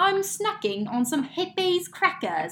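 bad, very high, swooping put-on British accent. Trying a test sentence once more in a bad british accent. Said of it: "countryside American accent than a British".

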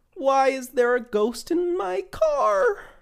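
very high, rising cartoon slacker voice. Imitating the voice another person does while joking about it, put-on high voice. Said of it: "his voice goes high".

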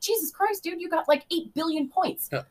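high-pitched, amazed exclamation full of disbelief.

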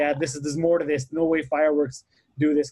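plain

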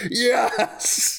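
high, excited, cried-out "yes".

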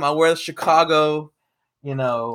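usual speaking voice

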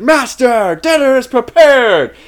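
mock, very high, super-excited, proud, drawn-out delivery. Retelling a woman announcing dinner to her master after banging a gong, mock-proud. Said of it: "Like real proud of herself".

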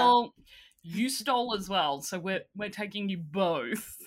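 ordinary delivery

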